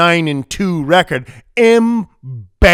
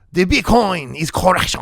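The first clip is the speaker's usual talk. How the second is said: exaggerated, terrible put-on French accent; 4 dB quieter than usual. Saying the Bitcoin correction line as the French would, terrible French accent. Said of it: "as the French would say. ... That is a terrible French accent".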